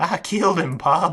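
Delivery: put-on speaking in a British accent. Retelling a line an actor said in a scene: british accent. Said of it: "in a British accent".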